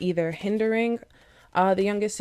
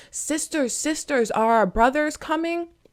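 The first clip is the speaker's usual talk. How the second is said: pitched-up, yelling cry; 9 semitones higher than usual. Retelling a folktale where she screams out the window: retelling a scream out a window. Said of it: "she's screaming out of the window".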